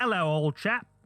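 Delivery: clumsy, bad put-on English accent. Greeting the co-host in a joking bad English accent. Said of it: "I'm terrible at accents".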